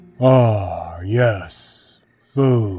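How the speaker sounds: heavy, dull tone with drawn-out ah. Reading a story where a man at the door answers: heavy, dull voice. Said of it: "he replied in a heavy, dull voice".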